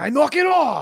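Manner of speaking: very high-pitched, angry, mad dad voice. Recalling how they teased Darren, the speaker does his line: imitating Darren's dad voice. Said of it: "turn on his dad voice".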